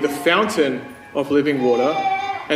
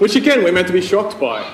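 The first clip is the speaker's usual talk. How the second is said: ordinary delivery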